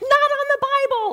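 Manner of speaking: piercing, very high, loud shrieked screech. Speaker retelling their reaction as a man sets down coffee, screeching. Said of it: "And I screeched".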